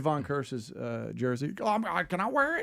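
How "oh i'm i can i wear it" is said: put-on weird, higher-pitched kid voice. Retelling his kids finding old jerseys: imitating his kids, weird voice. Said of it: "your kids sound weird now".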